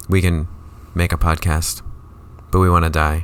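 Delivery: dry, flat, expressionless deadpan delivery. Describing Gen Z humor, speaker gives an example line: deadpan. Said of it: "it's very deadpan too".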